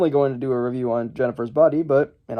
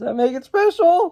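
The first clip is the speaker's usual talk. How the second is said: very high, breaking squeak of a voice; 13 semitones higher than usual. Showing viewers the first movie bought, voice cracking. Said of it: "voice crack, scary voice crack".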